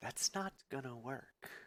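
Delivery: small, faint, tiny voice, almost a whisper. Narrating a scene, voice a small voice from the player's right, almost a whisper. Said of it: "a small voice from your right side, just almost a whisper".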